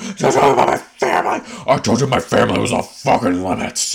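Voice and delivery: shouting. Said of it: "[name] yell at Lisa".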